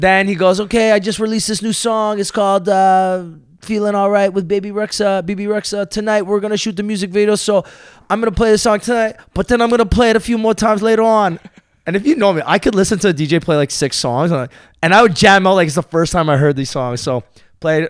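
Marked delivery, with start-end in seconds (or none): 0.6-11.4 put-on French-accented DJ voice, higher pitch. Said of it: "you sound like [name]".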